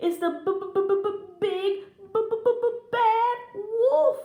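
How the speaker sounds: chattering stammer. A little pig spots the wolf at the window, teeth chattering. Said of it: "Boris chattered".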